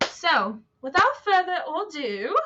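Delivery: very bad fake British accent. Introducing a reading of inspiring quotes, the speaker uses a very bad British accent. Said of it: "that's my very worst British accent".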